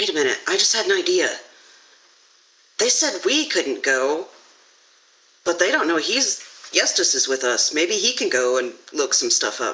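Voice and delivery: quiet hushed whisper. A character leans over to Val to share an idea, whispering. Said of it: "leans over to Val and whispers".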